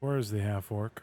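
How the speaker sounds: calm, collected, fully controlled and very composed voice. Voicing a character who lays a blade on a man's neck and asks: very calm voice. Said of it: "very in a very calm voice".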